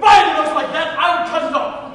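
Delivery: very loud, furious, angry shouting. Giving examples of varying the tone to fit a description, this one in an angry tone. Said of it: "In angry tone".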